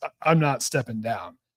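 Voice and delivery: plain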